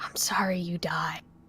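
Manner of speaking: very quiet, slow, solemn, dead serious voice. Voicing a character who apologizes to another character: very quiet and serious. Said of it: "he's gonna just kinda very quietly be like".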